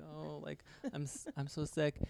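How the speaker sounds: very soft, quiet, timid, meek and mild. Retelling how a passenger came on board: imitating a meek, mild voice. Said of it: "meek and mild".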